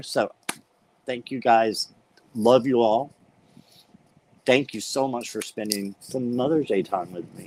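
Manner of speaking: voice on the verge of tears. Thanking viewers at the end of a Mother's Day live: on the verge of tears. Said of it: "but I'm right there".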